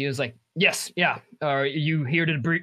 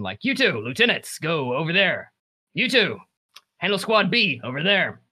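booming, resounding, carrying voice. A figure pointing at people in the line and assigning tasks, in a booming voice. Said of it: "the booming voice".

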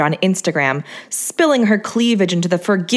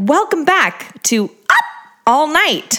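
up twisted into a high dolphin-like squeak; 8 semitones higher than usual. Play the host welcoming viewers back to the show, with "Up" twisted into a high-pitched squeak. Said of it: "she twisted the up into a high-pitched squeak like a dolphin".

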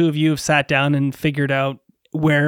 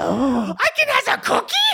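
very high, sing-song, swooping pigeon voice; 11 semitones higher than usual. Asked about their pigeon voice for reading the story, showing it: pigeon voice. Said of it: "What's your pigeon voice?".

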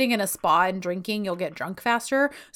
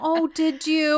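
put-on patronizing, teasing tone, holding in a laugh; 7 semitones higher than usual. Retelling a couple's argument about Paris, quoting him: imitating a muffled laugh. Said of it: "he's like trying to muffle a laugh".

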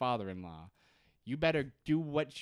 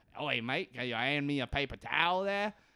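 broad-sounding put-on Australian accent; 3 semitones higher than usual. Retelling a tv scene, quoting a fella in a bathroom: imitating an australian accent. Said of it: "'cause he's Australian, and that's how Australians s-, sound".

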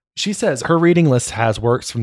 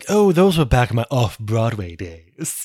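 put-on aging starlet voice. Joking about a book's phrasing, mimicking an old starlet voice. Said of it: "like an old starlet being like".

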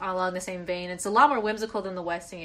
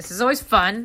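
loud, firm, no-arguments assertive voice; 6 dB louder than usual. Introducing the currently reading section: said really assertively. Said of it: "I said that really assertively".

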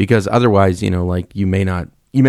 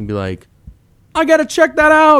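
put-on old East Coaster voice, much higher, slower; 3 dB louder than usual. Showing a friend how the alien next door on a show talked, imitating an old East Coaster. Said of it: "He just sounded like an old East Coaster".

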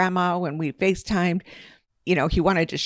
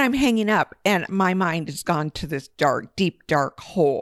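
ordinary delivery

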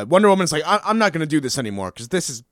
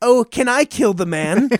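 put-on sweet little old grandma voice, slow and higher; 6 semitones higher than usual. Retelling a tv scene, quoting a sweet old grandma. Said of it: "sweet old grandma comes up. She's like".

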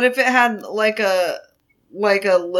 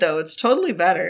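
normal talking voice

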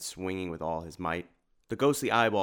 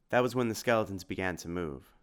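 plain

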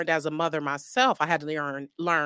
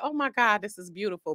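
sudden burst of pure, thrilled excitement; 4 semitones higher than usual. Retelling own reaction to good news: imitating own excited reaction. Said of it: "I was just so excited, like".

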